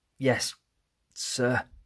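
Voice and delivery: feeble, weak, high voice with little strength. Answering the warden after passing out in the gym: weak voice. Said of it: "I say in a weak voice".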